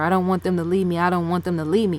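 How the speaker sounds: ordinary talk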